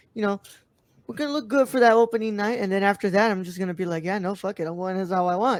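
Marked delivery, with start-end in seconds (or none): none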